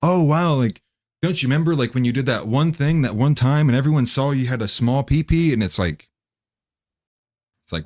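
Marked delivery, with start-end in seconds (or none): 0.0-5.5 high, aggressive, needling, teasing tone. Retelling a rom-com dinner table scene: imitating an aggressive rom-com girl. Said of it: "the girl's like".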